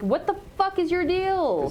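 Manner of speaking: sudden, high-pitched, exasperated shouted outburst. Playing a character underground facing a worm: yelling. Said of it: "I just yelled, like".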